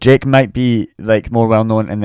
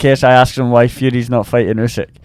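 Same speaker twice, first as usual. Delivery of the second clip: plain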